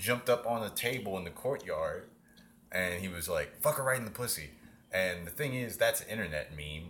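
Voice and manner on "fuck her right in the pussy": imitated scream, yelped out high. Retelling what the quarterback yelled from a courtyard table: imitating a scream. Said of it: "He screamed it".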